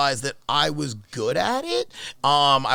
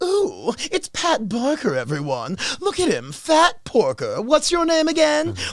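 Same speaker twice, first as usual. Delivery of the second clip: silly, goofy, high-pitched put-on voice; 10 semitones higher than usual. Mocking an opponent in front of everyone, in a stupid put-on voice. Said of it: "Like doing this like stupid voice".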